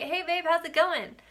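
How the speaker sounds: high-pitched, bright, cheery voice. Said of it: "He was all cheery, bright".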